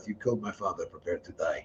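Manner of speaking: very quiet, very low, hushed mutter under the breath. Retelling a remark made during a class circle: imitating muttering under breath. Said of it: "I just said under my breath".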